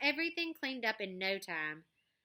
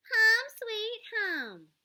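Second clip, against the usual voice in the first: very high, loud, taunting, mocking voice; 14 semitones higher, 7 dB louder than usual. Narrator reading a reply from the doorway echoing another character, Mean Mimi's mocking voice. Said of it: "a mocking voice replied from the doorway".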